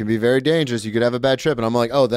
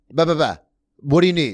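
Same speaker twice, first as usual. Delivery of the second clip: put-on aggressive tone; 4 semitones higher than usual. Retelling how he answers strangers who stop him: retelling an aggressive reply. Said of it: "Sometimes I get a little aggressive".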